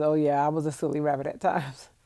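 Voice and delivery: plain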